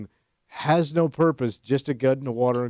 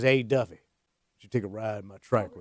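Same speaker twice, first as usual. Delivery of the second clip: stone cold, deep put-on country accent; 4 semitones lower, 4 dB quieter than usual. Quoting a man in a midlife crisis talking to Duffy, in a put-on country voice. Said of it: "Billy changed his voice".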